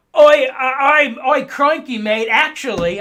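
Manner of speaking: very loud, very slow, high, bad Australian accent. Imitating commenters from Australia complaining: bad Australian accent. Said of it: "I can't do an Australian accent".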